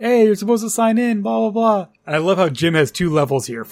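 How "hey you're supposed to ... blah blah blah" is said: high-pitched hollering yell. Retelling how the dispatcher catches the intruder: imitating the dispatcher yelling. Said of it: "starts yelling at him".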